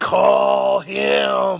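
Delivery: booming shout.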